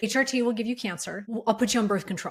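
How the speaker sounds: ordinary talk, nothing marked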